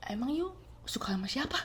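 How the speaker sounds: very quiet, hushed whisper. Retelling what someone first asked her, imitating a whisper. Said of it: "dia bisik-bisik dulu".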